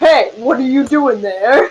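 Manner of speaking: super intimidating, threatening, manly voice. A player's character uses magic to call out in an intimidating, manly voice. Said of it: "make my voice sound super intimidating and manly".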